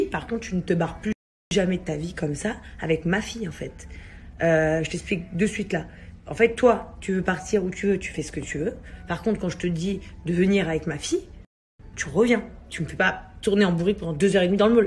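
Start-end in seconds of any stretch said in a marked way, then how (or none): none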